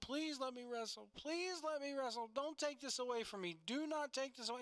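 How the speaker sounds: sobbing, tearful crying voice. Retelling a wrestler's promo where he begs to keep wrestling: imitating Smith Garrett crying. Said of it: "he starts crying".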